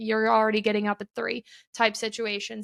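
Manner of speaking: normal talking voice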